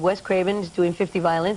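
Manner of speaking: ordinary talk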